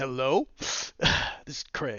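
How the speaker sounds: mock overconfident voice. Retelling how a guy introduces himself to a woman, in a mock overly confident voice. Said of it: "in his overly confident voice".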